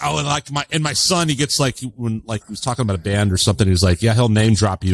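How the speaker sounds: usual speaking voice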